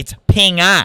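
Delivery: put-on accent dropping the hard r. Retelling a man correcting how he says a word, accent without the hard r. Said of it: "We don't do the hard R over here".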